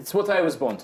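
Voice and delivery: exaggerated, swooping Eastern European accent. Player redoing a line in character as Araya, Eastern European accent. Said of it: "Araya is more accented Eastern European".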